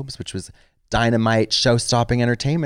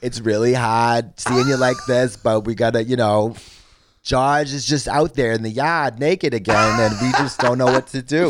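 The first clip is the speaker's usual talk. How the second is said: put-on Boston accent. Imagining an intervention done in Boston, Boston accent. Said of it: "be the same thing with Boston".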